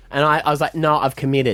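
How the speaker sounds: ordinary delivery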